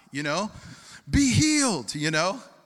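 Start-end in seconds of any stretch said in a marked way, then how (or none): 1.1-1.9 very high, loud faith-healer preacher shout. Mimicking the guys on stages healing people: imitating a stage preacher screaming. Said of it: "like the guys on stages this high".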